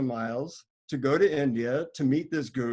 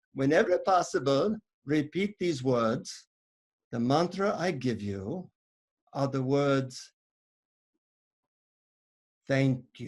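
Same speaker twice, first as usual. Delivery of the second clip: put-on Indian accent, whispering. Retelling a man leaning in to whisper a mantra, in an Indian accent. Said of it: "he leans in to whisper it into my ear".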